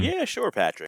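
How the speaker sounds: appeasing, humoring, placating tone. Acting out a producer humoring a writer's bad idea: appeasing, humoring tone. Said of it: "you're even appeasing him".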